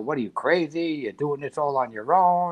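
put-on half-shout, mild yell kept in check. Retelling how the chief yelled at him: imitating someone yelling. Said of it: "he's yelling at me".

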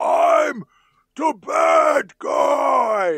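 very high, very slow, drawn-out raging scream. Retelling how Stallone screams his line in the movie: imitating Stallone screaming. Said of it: "just the way that he screams".

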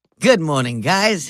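damaged, battered-sounding voice from a hurt throat. After getting punched in the throat, greeting the guys in a Kathleen Turner voice. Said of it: "[name], what's wrong with your voice?".

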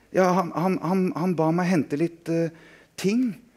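high, quavering, trembling voice, very slow and drawn out. Reading Gusto's answer to a threatening question, in a trembling voice. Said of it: "med dirrende stemme".

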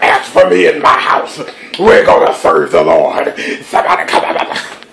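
loud, projecting preacher-style call. Preaching in impression after naming the preacher: T D Jakes impression. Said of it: "T D Jakes, let's see".

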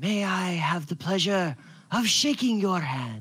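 awed, reverent kobold creature voice, full of wonder. Voicing a kobold leader reaching to shake the captain's hand: awed, reverent kobold voice. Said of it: "like he was in the presence of something special".

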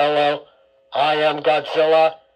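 electronically distorted voice. Demonstrating voice changers, the speaker greets listeners through one: voice-changer distorted voice. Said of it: "This is really changing my voice a whole lot".

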